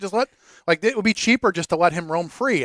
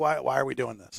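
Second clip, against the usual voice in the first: put-on grumpy voice, lower pitch and quieter; 5 semitones lower, 7 dB quieter than usual. Playing a guy in a movie who is always upset: acting an always-upset guy. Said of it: "one of those guys that's just always upset".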